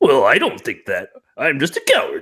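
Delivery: swooping, cartoony old-timey character voice. Speaker describing a character's voice, quoting it in a cartoony old-timey character voice. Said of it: "it's very cartoony, but also like old timey".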